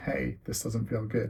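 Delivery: ordinary delivery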